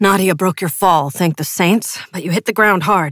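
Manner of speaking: plain reading voice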